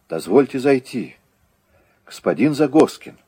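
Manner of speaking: imploring, begging, pleading tone. A sergeant at the window speaking to the man inside, pleading. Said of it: "умоляюще произнес сержант".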